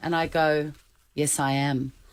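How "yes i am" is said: dry, flat, expressionless deadpan delivery. Retelling answering a stranger who recognised her: retelling own deadpan reply.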